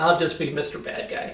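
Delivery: ordinary delivery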